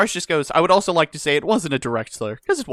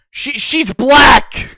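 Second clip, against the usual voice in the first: put-on yell, much louder; 9 semitones higher, 8 dB louder than usual. Speaker retells their own all-caps reply, retelling an all-caps shout. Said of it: "crack open the good old all caps".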